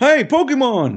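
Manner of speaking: high, loud, belted yell. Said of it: "I yell".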